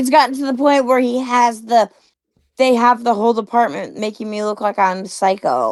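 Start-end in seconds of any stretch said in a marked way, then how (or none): none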